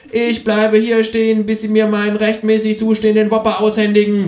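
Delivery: high-pitched, stubborn-sounding kangaroo character voice.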